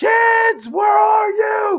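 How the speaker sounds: very high, long, drawn-out screaming call. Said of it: "you don't scream out".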